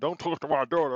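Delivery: put-on old father voice. Acting out an old father with a cane: imitating an old father with a cane. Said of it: "you the old ass father with your cane".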